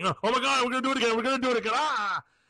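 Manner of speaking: high, frantic, panicky outburst. Acting out football players starting to panic after a touchdown: imitating panicking players. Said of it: "they're gonna start panicking".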